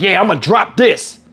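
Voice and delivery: put-on cocky, confident know-it-all tone, slow drawl. Retelling how a witness in court answered questions: imitating a know-it-all tone. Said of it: "he acted like he kicking the knowledge".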